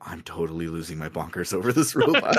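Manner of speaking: stage whisper, a loud whisper meant to be heard. Retelling what he said to himself after the girls thanked him; retelling a half-whisper to himself. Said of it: "he whispers to himself".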